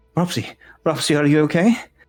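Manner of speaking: a bit panicked character voice. Narrating a scene where Cleary's face appears after being called, Cleary, a bit panicked. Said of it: "a bit panicked, and he goes".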